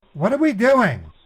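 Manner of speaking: high, loud yelling. Asking the support agent on a call what they are doing, shouting. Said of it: "why are you shouting".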